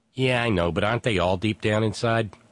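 normal talking voice

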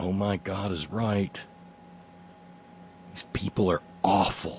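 mock muttering. Retelling a server's reply to the speaker, imitating someone muttering under her breath. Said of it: "under her breath".

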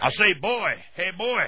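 blustery cartoon rooster voice. A caller praising the host's voice does a Foghorn Leghorn impression. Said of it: "Foghorn Leghorn, he said".

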